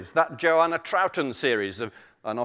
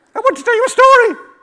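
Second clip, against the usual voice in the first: very high, very loud, fast, squeaky small-animal voice; 13 dB louder than usual. Telling a story where a lizard answers a snake, in a small animal voice. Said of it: "all my small animals have got the same voice".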